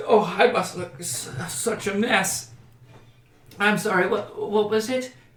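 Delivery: teary voice. A woman in a roleplay scene wipes her tears and apologizes to a stranger, tearful. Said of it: "wipes tears away from her eyes".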